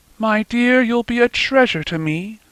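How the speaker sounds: gently spoken, tender, lifted voice. Narrator reading Nancy's words to the child, gentle voice. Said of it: "in her gentle voice".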